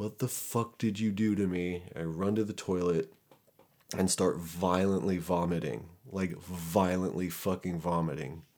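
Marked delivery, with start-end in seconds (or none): 0.0-1.8 accusing mock scream kept near talking volume. Retelling a reaction to a shot of meth: imitating someone screaming. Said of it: "I start screaming at Lindsay".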